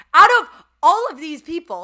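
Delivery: shouting at full blast, very loud and high. Telling a story about showing up to a dinner in Miami, the speaker is yelling. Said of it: "sorry, I'm yelling".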